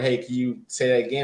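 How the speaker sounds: ordinary delivery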